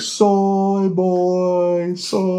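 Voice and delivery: put-on very high loud screaming, "boy" drawn out. Retelling a video clip: imitating PewDiePie screaming into the camera. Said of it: "he's screaming".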